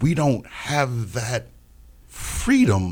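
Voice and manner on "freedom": freedom strongly stressed. A speaker making a point to listeners, stressing the word freedom. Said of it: "emphasis on freedom".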